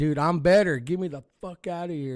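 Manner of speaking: furious, loud, high-pitched yell, half out of breath. Retelling fighting a doctor to leave, acting out screaming at him. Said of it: "I'm like screaming at him".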